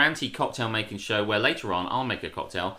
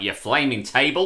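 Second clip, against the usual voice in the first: loud, put-on Australian accent; 3 semitones higher, 5 dB louder than usual. Explaining a misheard phrase by imitating the father: put-on Australian accent. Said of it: "your father's Australian".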